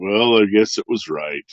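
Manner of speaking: gloomy, glum put-on voice. Telling a story and acting out someone's father in an Eeyore voice. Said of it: "his father doesn't sound like Eeyore at all, but that was just kind of my his dad voice".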